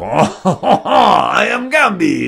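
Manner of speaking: loud, very slow, drawn-out, swooping, super French accent. Showing the usual way of doing the Gambit voice: super French Gambit voice. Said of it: "Normally I just go super French".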